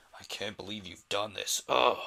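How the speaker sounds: forceful, low strained voice. Explaining his voice for the Invisible Man, the speaker demonstrates it: Invisible Man voice. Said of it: "pitching my voice down and I'm putting a little more force".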